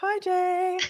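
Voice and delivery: put-on very high, sugary, gushing sorority-girl voice. Retelling a greeting just given to a viewer, imitating a sorority-sister greeting. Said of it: "as if we're, like, sorority sisters".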